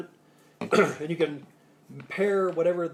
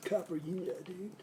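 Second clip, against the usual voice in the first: soft Southern California accent; 11 dB quieter than usual. Speaker shows how southern california friends would say it: southern california accent. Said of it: "for my Southern California friends".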